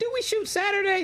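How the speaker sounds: very high, fake-innocent voice. Retelling a colleague's reply about a schedule conflict: imitating Kevin Hart's high-pitched lying voice. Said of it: "somebody gives you that high-pitched voice that you know they're lying".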